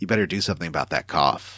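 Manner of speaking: low, quiet, dark, menacing, sinister acted tone. Retelling a story, quoting James to coughing Maria: very dark tone. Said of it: "in a very dark tone of voice".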